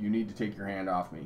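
calm, composed, low, quiet voice, no fuss. Retelling what they said to someone who grabbed their wrist, retelling speaking calmly. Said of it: "I just very calmly said to them".

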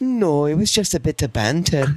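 put-on Scottish accent in a woman's voice. Retelling a woman's reply in an interview, imitating a Scottish woman. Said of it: "do the Scottish chick".

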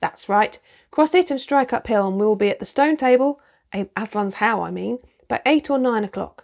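usual speaking voice

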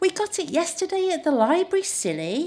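very high-pitched, chiding scold. Little [name] answers her mum's question, scolding. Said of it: "[name] scolded".

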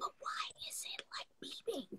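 weak, faint whisper, barely there. Retelling asking the nurse about the machine after the tube, reenacting a very low voice. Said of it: "That's how low my voice was".

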